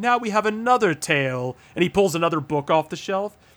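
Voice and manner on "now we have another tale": pitched-up, announcing storyteller host voice. Retelling the old narrator introducing the next game: imitating the Curator. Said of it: "the same fucking guy in that same office".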